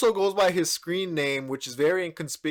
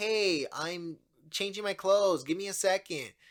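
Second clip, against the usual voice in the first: unconvincing, put-on little-girl voice; 3 semitones higher, 6 dB quieter than usual. Describing the old episodes, imitating the old decoy's voice. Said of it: "they used to have a voice, like".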